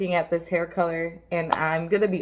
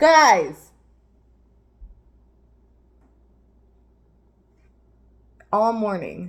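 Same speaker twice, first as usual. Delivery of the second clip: very loud, exasperated, fed-up yell; 6 dB louder than usual. Speaker calls out to the cats before a card reading, yelling. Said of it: "I apologize for yelling".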